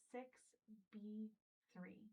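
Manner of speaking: whispering. Whispering a letter-and-number sequence during a hearing test: whispering. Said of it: "whisper a letter and a number sequence".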